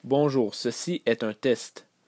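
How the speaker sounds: loud, slow, careful, very clear enunciation.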